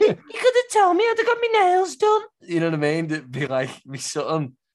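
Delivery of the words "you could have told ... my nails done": very high nagging moan. Imitating a partner who moans about a surprise: impression of partner moaning. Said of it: "it's a very good impression of my missus".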